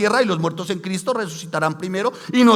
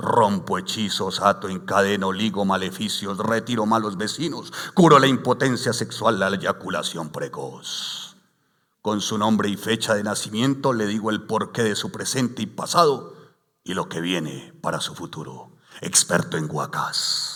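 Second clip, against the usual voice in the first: put-on radio announcer voice, pitched much lower; 11 semitones lower, 4 dB quieter than usual. Speaking about the church, the speaker reads an advertisement aloud in a radio announcer voice. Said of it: "voy a leerlo con voz de locutor".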